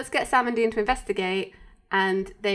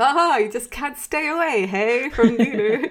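put-on sarcasm, higher and louder; 4 semitones higher, 5 dB louder than usual. Describing a favorite old character from an episode, the speaker quotes him: mock-sarcastic. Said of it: "he's really sarcastic, because he's like".

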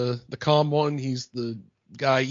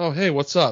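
put-on nervous voice; 2 semitones higher than usual. Retelling how Newman first answered the phone: imitating Newman sounding nervous. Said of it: "he's kinda little, little nervous".

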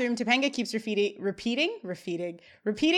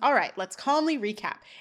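usual speaking voice

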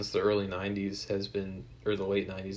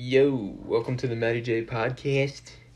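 loud, put-on South Jersey accent; 3 semitones higher, 5 dB louder than usual. Opening a podcast, the speaker uses a put-on South Jersey accent. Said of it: "I talk like this now, like I'm a South Jersey".

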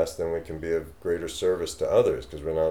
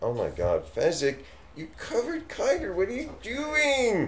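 dog voice, much higher. Speaking to the shedding dog, in a dog voice. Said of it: "That's my dog voice".

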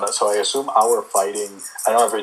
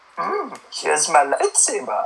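drawn out, high and swooping; 7 semitones higher than usual. Imagining being trained by Yoda, who hands over a lightsaber: Yoda voice. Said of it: "imagine you're trained by Yoda, and he just goes".

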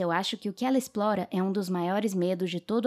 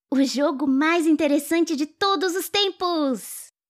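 breathless panting, high and loud; 9 semitones higher, 6 dB louder than usual. A girl packing pots and tools answers her mother's question; panting. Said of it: "Mink disse arfando".

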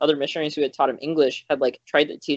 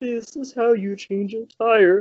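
put-on goofy kids'-show dinosaur voice, pitched high; 7 semitones higher than usual. Showing how remembered information would come back in Barney's voice: Barney the Dinosaur voice. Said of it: "Barney the Dinosaur's voice".

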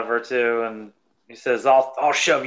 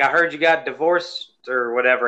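usual speaking voice

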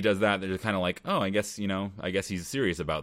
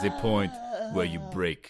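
swooping put-on German accent. Retelling a movie character's line about breaking: imitating a German accent. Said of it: "a German accent".

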